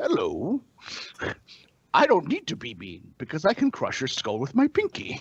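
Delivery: put-on very proper British accent with swinging, swooping pitch. Describing how a character talks, in a Bane-like proper British accent. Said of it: "he's got this very proper British accent".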